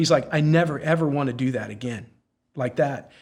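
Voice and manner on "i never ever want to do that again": acted-out tearful, crying voice. Retelling what a man said after being brought back, imitating him in tears. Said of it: "he had tears coming out of his eyes".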